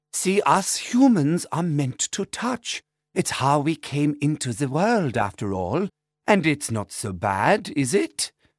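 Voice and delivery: German-tinged, exact, bookish English. A healer addressing the group after they embrace, in Ursula's German-spy voice. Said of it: "She is also a healer. / She looks young for 50 and speaks as if she's a World War II German spy, expertly repeating dated bookish English, a Teutonic phrase occasionally intervening between exacting v".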